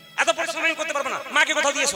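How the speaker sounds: high-pitched, loud, scolding voice.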